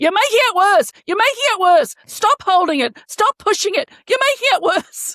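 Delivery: mock shrill, very high, frantic screaming. Retelling how she reacts as Mr. Sylvie tries to help, imitating her screaming at him. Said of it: "She's screaming at him".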